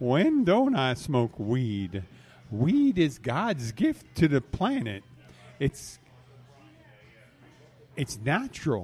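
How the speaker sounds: drawn-out, up-and-down, slow swooping sing-song buddy drawl. Doing both sides of an interview, answering as Jimmy Hawkins: Jimmy Hawkins voice. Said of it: "that's pretty much all the Jimmy I can do".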